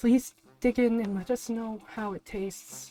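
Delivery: put-on elderly woman's voice. Voicing an old lady baker presenting a cake to customers: old lady baker presenting voice. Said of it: "And she goes".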